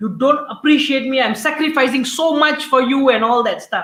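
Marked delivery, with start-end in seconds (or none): 0.0-3.1 resentful, angry, self-justifying outburst. Acting out a tired mom answering her son's complaint: acting out an angry reply. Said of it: "you can get angry and justify".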